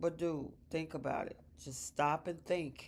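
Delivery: plain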